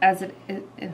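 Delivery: stuttering. Listing the milkshake recipe steps while stumbling over words: stuttering. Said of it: "I'm stuttering thinking about this recipe".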